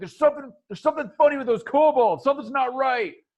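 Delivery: play-acted hurried, fast, high-pitched yelled delivery. Voicing a character alarmed that something is off with the kobolds: shouting. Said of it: "and he shouts".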